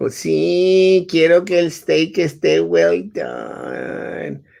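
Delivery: creaky voice with a stretched-out "sí". Retelling an exchange with mom, the speaker answers as mom, imitating mom's voice. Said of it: "do your mom's voice".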